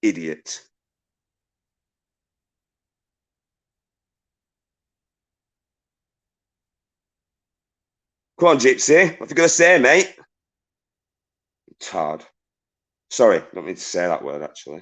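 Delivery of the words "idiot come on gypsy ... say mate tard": furious, wound-up rant, higher. Challenging someone in the chat to keep talking: furious angry ranting. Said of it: "It's got me fucking mad".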